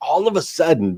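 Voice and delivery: ordinary talk, nothing marked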